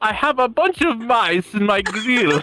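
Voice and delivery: imitated German voice. Retelling a video about mice found in a grill: imitating a German voice. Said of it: "he gets the German voice like".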